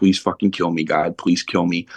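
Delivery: plain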